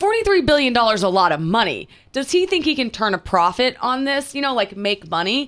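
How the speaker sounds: ordinary delivery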